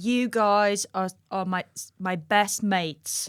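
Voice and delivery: British accent, put on. Podcast hosts open with a bit in their best british accents: british accent. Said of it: "best British accents".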